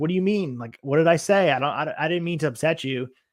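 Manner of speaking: panicky, flustered, freaked-out, stumbling pleading. Recapping a show, acting out a man left alone, acting out someone freaking out. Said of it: "Vince is freaking out".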